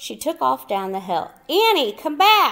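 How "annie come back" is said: very high, loud shouting. Narrator reads Jack calling after Annie as she runs down the hill, shouting. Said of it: "Jack shouted".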